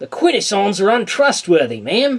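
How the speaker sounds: put-on loud, high-pitched Australian accent. Imagining how the Croc Hunter would say the word quintesson, in a Croc Hunter Australian accent. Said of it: "fucking Australian accent".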